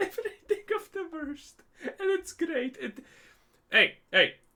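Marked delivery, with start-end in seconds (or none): 0.0-2.8 very high-pitched, giggling, laughing through words. Commenting on america to listeners, laughing while talking. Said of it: "I'm sorry for laughing".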